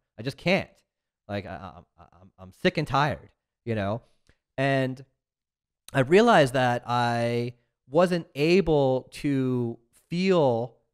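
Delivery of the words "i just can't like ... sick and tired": put-on desperate pleading, stammering on repeated words. Retelling a prayer to Jesus, imitating own begging. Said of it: "I was begging Jesus".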